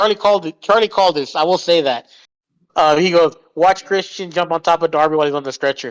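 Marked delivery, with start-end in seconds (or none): none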